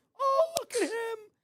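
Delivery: pitched way up and stretched out. Retelling how an aunt greeted a nephew: imitating Aunt Kathy. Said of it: "My Aunt Kathy would be the one that would be like".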